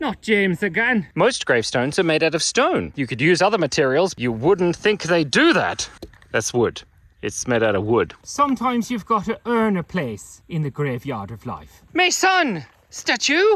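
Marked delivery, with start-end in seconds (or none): 11.9-13.6 bad fake Irish accent, higher pitched. Telling a pun joke about a cemetery statue: bad Irish accent. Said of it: "I know that was a bad Irish accent".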